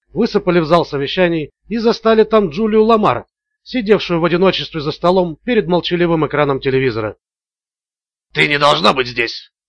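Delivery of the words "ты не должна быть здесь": reproachful, reproaching tone. Blake, finding Julia Lamar alone in the meeting room, speaks to her reproachfully. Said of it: "с упреком произнес Блейк".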